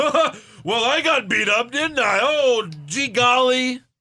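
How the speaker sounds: very high, loud, slow jokey drawl, laughing it off. Mocking a wrestler joking after a beating: imitating John Cena. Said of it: "Cena would get beat up by the Nexus and be like".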